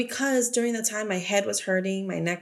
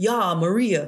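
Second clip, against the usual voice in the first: exaggerated tough thug voice. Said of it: "he's like, super thug".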